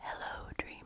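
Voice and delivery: put-on whispery French accent. Recalling the first words of a sleep story, in a whispery french accent. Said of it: "whispery voice with a wonderful French accent saying".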